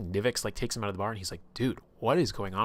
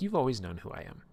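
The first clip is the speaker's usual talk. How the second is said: play-acted, needling, taunting, teasing tone; 3 semitones higher than usual. Retelling a dream character's words to a player, imitating a taunting voice. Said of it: "taunting her and teasing her".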